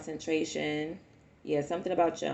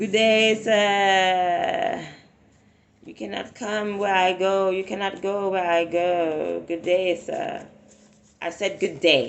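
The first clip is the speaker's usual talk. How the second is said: loud, slow sarcastic tone with "sir" stretched out; 3 semitones higher, 8 dB louder than usual. Telling unwanted spirits to leave: sarcastic dismissal. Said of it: "Be sarcastic with their ass".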